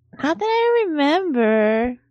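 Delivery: spacey, high-pitched impression voice. In a hotel-room scene, replying to a question; Shelley Duvall impression. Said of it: "she's like spacey sounding and she's got a high voice".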